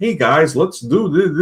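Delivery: goofy voice, no bass. Describing a man who lacks a commanding voice: goofy voice without bass. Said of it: "He sounds like a like a Muppet. ... like kind of a goofy".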